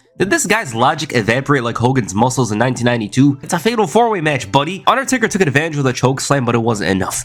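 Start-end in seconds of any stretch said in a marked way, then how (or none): none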